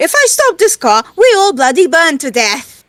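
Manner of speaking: loud shrieking in a put-on character voice. Voicing Athena driving, shrieking back at a demand to stop the car. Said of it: "Athena just shrieks back".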